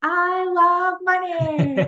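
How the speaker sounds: very high, exuberant, joyful yelling. Retelling a money exercise done on walks, imitating own yelling. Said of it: "yelling it out".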